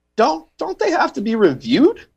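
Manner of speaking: voice rising high. Asking whether Wikipedia facts have to be reviewed, voice going high. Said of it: "did you hear how high my voice went".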